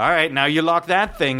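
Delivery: normal talking voice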